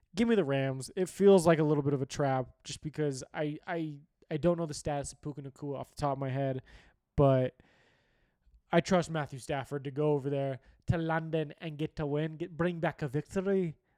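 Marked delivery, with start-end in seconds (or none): 7.2-13.8 put-on Scottish or Irish accent. Picking the Rams to win in London, a speaker puts on a Scottish or Irish accent. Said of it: "I don't know if that's Scottish or Irish".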